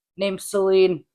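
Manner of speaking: most masculine, manly, macho tough-guy voice. Retelling meeting a stranger at a bar: imitating own masculine voice. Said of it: "in the most, like, masculine way possible".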